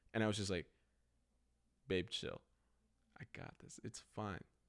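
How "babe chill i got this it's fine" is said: utterly unbothered, hushed, super-calm, soothing near-whisper. Retelling reassuring someone panicking about their car, retelling being super calm. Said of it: "But I was super calm".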